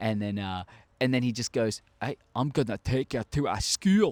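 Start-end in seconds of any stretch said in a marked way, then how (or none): 2.0-4.1 put-on sudden, heavy, full Scottish accent. Retelling how Hagrid tells Harry he is taking him to school: Scottish-accented Hagrid impression. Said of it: "He just turned really Scottish for a second".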